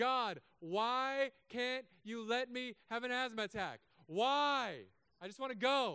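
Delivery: frustrated, very high, drawn-out scream. Retelling falling to the knees, crying out to god: imitating own screaming. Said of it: "was screaming at the heavens".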